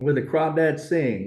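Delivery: put-on Southern accent. Saying the film title with a phony Southern accent for a couple seconds. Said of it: "We're doing this phony Southern accent for a couple seconds".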